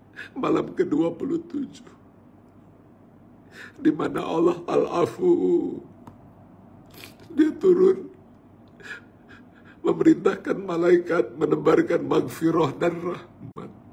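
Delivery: crying, weeping, tearful voice while speaking. Speaker addressing listeners on the twenty-seventh night, crying while preaching. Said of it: "mohon maaf saya menangis".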